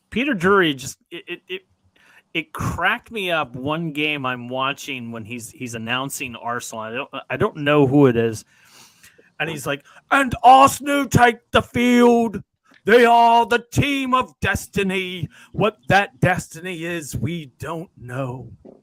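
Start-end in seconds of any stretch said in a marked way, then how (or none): 10.1-18.6 booming, drawn-out, higher-pitched announcer voice. Retelling a commentator announcing Arsenal, the speaker does a Peter Drury impression. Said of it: "the big b- booming voice announcer".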